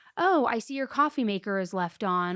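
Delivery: normal talking voice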